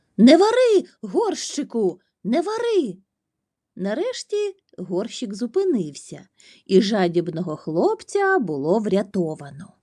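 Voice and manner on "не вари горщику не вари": shrill, urgent, very high-pitched shouting. Narrator reads Hanna calling the magic words to the pot, shouted. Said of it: "Ханна закричала чарівні слова".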